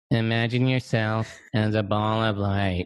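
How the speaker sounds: grating, annoying guided-meditation narrator voice. Making fun of the narrators on meditation albums, mocking an annoying meditation voice. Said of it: "they would have the most annoying voice".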